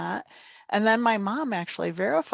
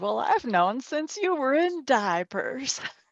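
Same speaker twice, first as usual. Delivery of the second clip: put-on Arkansas accent, pitched up; 5 semitones higher than usual. Retelling how Grandma from Arkansas answered his surprise, in an Arkansas accent. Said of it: "so I got to try to do the accent right".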